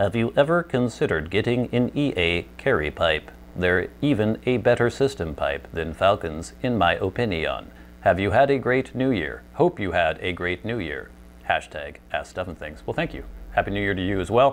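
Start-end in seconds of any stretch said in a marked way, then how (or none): 0.0-12.8 mechanical robotic delivery. Reading out a question someone sent in, robot voice. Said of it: "so Tyler gets a robot voice".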